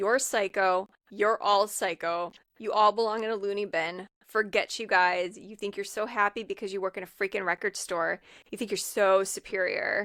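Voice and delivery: ordinary talk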